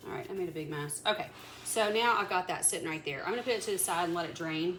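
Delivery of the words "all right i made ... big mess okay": plain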